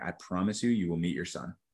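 put-on very stern tone, every word deliberate. Retelling the doctor's last words before surgery: imitating a stern, deliberate tone. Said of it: "in a completely very stern and, like, very deliberate tone".

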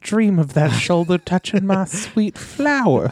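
mock, put-on creepy voice. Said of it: "That's what it sounds like when she says".

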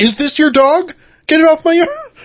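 imitated angry yell. Retelling telling neighbors to get their dog off the yard: retelling an angry yell. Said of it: "you scared off the people and the dog".

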